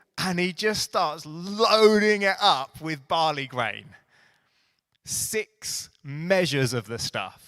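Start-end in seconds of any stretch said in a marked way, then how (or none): 5.1-7.3 slow, stressed, emphatic "measures". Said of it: "I'm putting a bit of emphasis on it".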